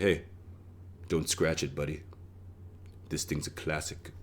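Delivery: put-on smug tone, hushed, breathy whisper. Speaker showing the voice they use with the valet parking their car: put-on smug voice. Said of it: "That's my smug voice".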